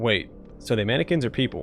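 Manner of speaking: usual speaking voice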